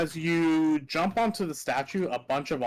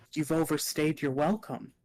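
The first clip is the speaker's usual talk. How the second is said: put-on childlike voice. A narrator voices something tall leaning down behind Adrian, kid's voice. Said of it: "a kid's voice says".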